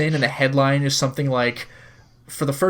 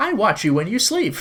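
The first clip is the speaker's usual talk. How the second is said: odd, high, weird wind-up toy robot voice; 7 semitones higher than usual. Describing a wind-up robot in a game: [name] the robot voice. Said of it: "she starts getting weird".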